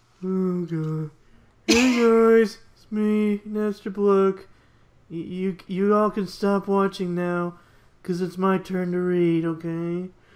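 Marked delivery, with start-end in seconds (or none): 1.7-10.1 gloomy, dejected, depressed voice pitched a bit high. Taking a turn to read as Napstablook: depressed Napstablook voice. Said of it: "Time to get all depressed and shit".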